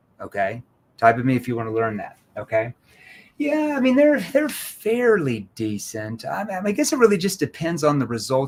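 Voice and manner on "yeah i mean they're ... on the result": doubtful, uncertain, skeptical, swooping tone. Showing how tonality alone can trigger doubt, skeptical tone. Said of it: "I can trigger uncertainty and doubt simply by using my tonality".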